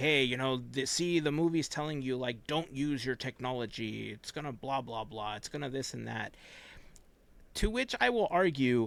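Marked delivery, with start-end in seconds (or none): none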